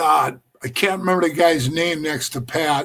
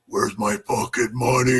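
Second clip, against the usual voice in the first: dropped deep, demanding tone; 5 semitones lower, 5 dB quieter than usual.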